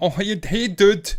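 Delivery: drawn-out Americanized Scottish accent. Mocking how Glasgow Uni hipsters talk, put on an Americanized Scottish accent. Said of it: "They've kind of got the Americanized Scottish accent".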